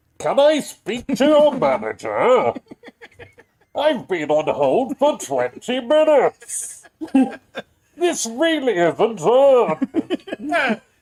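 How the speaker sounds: very high, loud, swooping, complaining voice. Playing a caller kept on hold who asks for the manager, Bane voice. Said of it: "give me some dialogue for a Bane voice".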